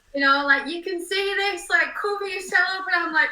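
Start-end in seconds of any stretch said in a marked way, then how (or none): 0.6-2.8 put-on, raised, pitched-up shout. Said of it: "she's shouting".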